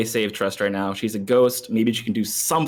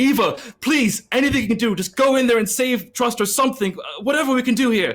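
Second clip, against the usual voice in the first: urgent, pleading raised voice. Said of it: "call to Eva".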